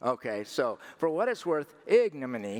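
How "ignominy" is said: ignominy with stress on first syllable ig. Unsure how to pronounce ignominy, trying it with stress on ig in ignominy. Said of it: "supposedly, the stress is on the ig".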